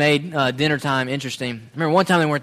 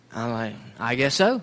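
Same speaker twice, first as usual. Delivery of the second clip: ordinary delivery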